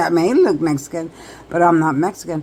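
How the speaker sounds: plain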